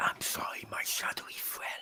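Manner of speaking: very hushed, apologetic little whisper. A character on his turn whispers apologetically to the shadow. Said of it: "he seems to be whispering".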